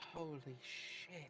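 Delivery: muttered under her breath. Playing a character in a tabletop game, reacting under her breath. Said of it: "Just real softly, Willow, just under her breath".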